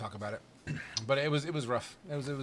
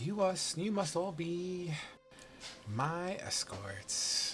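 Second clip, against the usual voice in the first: sultry, very high, very slow, drawn-out flirtatious voice; 5 semitones higher, 3 dB quieter than usual. Voicing the elven woman sizing up the party: flirtatious voice with sex appeal. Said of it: "some sort of a sex appeal in her voice".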